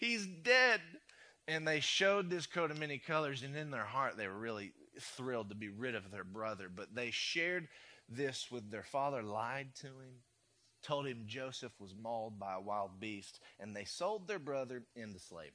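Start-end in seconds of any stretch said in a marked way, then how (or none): 0.0-0.8 high, slow, fake upset grieving cry. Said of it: "Came in all upset".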